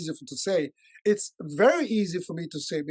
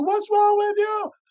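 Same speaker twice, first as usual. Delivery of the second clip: put-on very high, shrill, raised teenage yell; 5 dB louder than usual. Acting out a fourteen-year-old yelling back at a parent: imitating a teen yelling. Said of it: "they're gonna yell at you".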